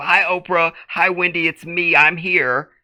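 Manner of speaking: slow, drawn-out call-in TV caller voice. Mocking space-communication audio, the speaker imitates a caller to a TV show. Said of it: "like the bitch is calling into a television show".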